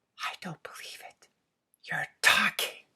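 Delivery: amazed, astonished, very hushed, barely-there whisper. Narrating a story: a character stares at his talking mouse, in an astonished whisper. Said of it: "said in an astonished whisper".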